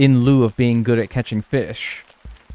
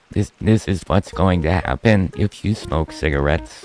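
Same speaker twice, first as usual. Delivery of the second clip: low, mechanical, robotic electrolarynx voice-box voice; 5 semitones lower than usual. Speaker imitates people in anti-smoking ads who talk through a voice box. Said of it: "a voice box in their stoma that's like".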